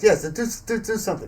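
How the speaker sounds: high, eager, pressing tone.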